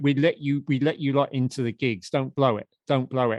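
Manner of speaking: plain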